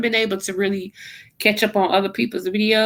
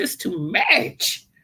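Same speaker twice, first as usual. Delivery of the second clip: talking like a grandmother. Imitating a grandmother saying it's too much: imitating grandmother's voice. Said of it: "in my grandmother's voice".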